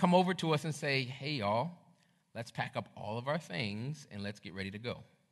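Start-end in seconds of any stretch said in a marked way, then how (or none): 1.0-5.0 soft, calm, composed, businesslike professional tone. Retelling what the camp counselors came over and said; retelling counselors' calm professional tone. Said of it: "in a very honestly professional and calm voice".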